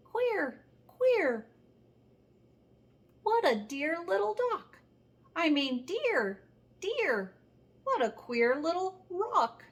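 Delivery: tiny, high, funny little mouse voice. Narrating how the speaker's father wakes to hear a mouse speaking: funny little mouse voice. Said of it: "funny little voice saying".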